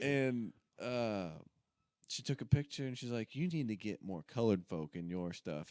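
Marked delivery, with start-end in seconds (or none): 3.3-5.7 sassy, snappy put-on woman voice.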